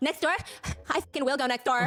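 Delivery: put-on angry woman tone. Retelling the woman's reply as she storms out: imitating an angry woman. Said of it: "that's her energy".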